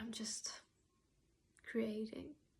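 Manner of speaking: voice close to tears. Talking about feeling proud of being creative again: almost crying. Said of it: "I'm almost crying right now".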